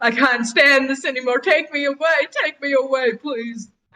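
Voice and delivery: crying, pleading voice. The narrator voices a priest calling after departing city guards, sobbing, desperate pleading. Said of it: "a sobbing priest who is desperately calling after them".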